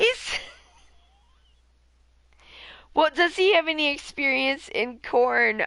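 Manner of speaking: high voice, talking through laughter. Reacting on stream to a joke someone made, laughing while speaking.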